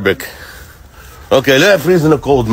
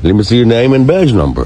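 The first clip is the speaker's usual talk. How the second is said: plain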